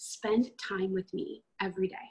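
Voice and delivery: soft, gentle delivery. Recounting the Lord's words heard in the heart, retelling a gentle voice. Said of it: "in a gentle voice".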